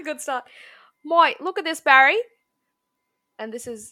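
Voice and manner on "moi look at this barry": very loud, high-pitched Australian accent. Announcing a bit, the speaker starts it in an aussie accent. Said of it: "I'll do this in an Aussie".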